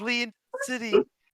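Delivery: very high, piercing, shrill shrieking yell. Describing voices heard in the background as players approach, high-pitched yelling. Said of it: "One is very high pitched and it's yelling".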